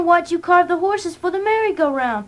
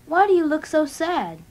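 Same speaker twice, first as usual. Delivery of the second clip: usual speaking voice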